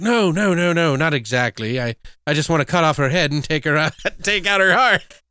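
casual, matter-of-fact movie-character voice. Retelling a funeral scene from a movie: casually imitating Van Helsing. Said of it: "He just says it so casually".

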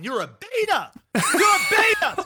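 put-on, high-pitched screamed jeering. Retelling screaming at a reality show man on tv: retelling own screaming at tv. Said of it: "I was screaming for episodes going".

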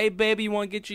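high, coaxing street hustler voice. Describing a game scene when mom walks in: imitating a roadside prostitute. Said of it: "some prostitute on the side of the road that's like".

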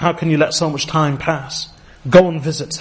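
usual speaking voice

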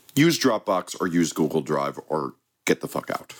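ordinary talk, nothing marked

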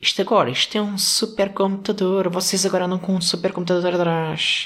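put-on old man voice. Mimicking the joke old people always make about phones; old man voice. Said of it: "Isto é a minha voz de velho".

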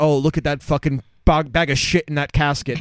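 normal talking voice

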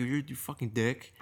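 mock muttering under breath. Retelling a reply to a pushy guy at a line: muttered under breath. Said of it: "under my breath".

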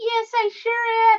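loud, very high-pitched frog puppet voice. A puppeteer voices her frog puppet answering, in Camilla the frog puppet voice. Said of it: "she's my puppet".

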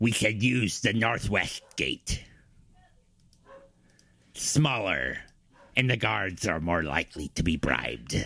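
swashbuckling pirate character voice. Answering another character's question in role, in a pirate voice. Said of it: "Now I'm doing a pirate voice".

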